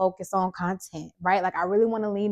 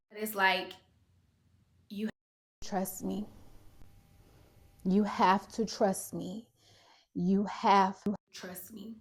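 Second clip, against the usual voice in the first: soft, emotional, deeply moved; 5 dB quieter than usual. Speaker telling listeners about trusting God, getting emotional. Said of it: "oh, I'm getting emotional".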